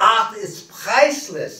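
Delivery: put-on, imitated Yiddish accent. Translating what a man said about his art, in a yiddish accent. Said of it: "in a Yiddish accent".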